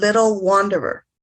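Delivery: ordinary talk, nothing marked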